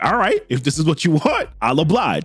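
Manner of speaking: normal talking voice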